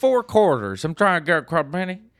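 put-on Southern accent. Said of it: "it sounds like I'm just making fun of Southern people".

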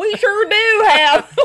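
put-on very high, loud North Carolina accent. Speaker retells what a man at a Christmas tree farm said, imitating a North Carolina accent. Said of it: "The North Carolina accent that fell out".

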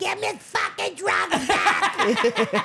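very high, very slow, swooping, drawn-out voice. Retelling how a friend's mother demanded her drugs back: imitating a crack addict woman. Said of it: "Just a little crack addict woman".

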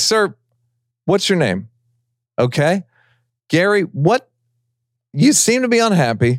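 courteous service-desk manner. Retelling how Jerry Seinfeld handles a heckler: imitating Jerry Seinfeld's customer-service tone. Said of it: "treats it like a, a, uh, customer service issue".

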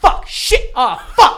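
very loud, drawn-out, frightened swearing. Answering whether you talked to yourself as it happened, retelling scared cursing. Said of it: "because I was scared".

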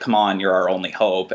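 ordinary talk, nothing marked

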